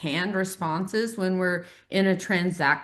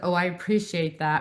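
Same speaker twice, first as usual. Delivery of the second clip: mock, snotty passive-aggressive tone. Describing a canned reply someone might give: mock passive-aggressive. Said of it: "like a passive aggressive".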